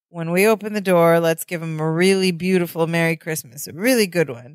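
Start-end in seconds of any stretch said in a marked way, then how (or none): none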